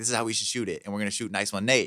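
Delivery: ordinary delivery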